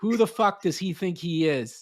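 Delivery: acted-out yell. Retelling how the other speaker yelled on a call: imitating someone yelling. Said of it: "you start yelling at me like".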